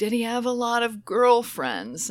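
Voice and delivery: high-pitched yelling. Retelling how they yelled a question to a man; retelling own yell. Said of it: "And I'm yelling".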